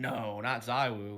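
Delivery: tongue-in-cheek, sarcastic voice. Explaining an earlier remark by repeating it: imitating own sarcastic remark. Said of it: "kinda sarcastic saying".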